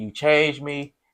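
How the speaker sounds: high, mock pleading, imploring tone. Retelling a film scene where a character pleads: imitating a pleading plea. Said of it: "really pleading".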